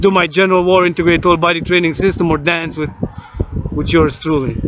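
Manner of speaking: ordinary talk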